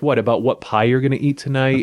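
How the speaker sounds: ordinary talk, nothing marked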